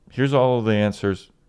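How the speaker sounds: normal talking voice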